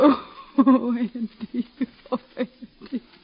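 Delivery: crying while speaking. A mother telling her son that Robbie has died, crying. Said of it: "Don't cry, Ma".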